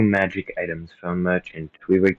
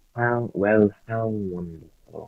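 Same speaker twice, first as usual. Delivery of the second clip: mocking, sarcastic tone in a slow drawl. Role-play game, Arthur answers someone who just pressed him into service, sarcastic. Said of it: "In a sarcastic tone".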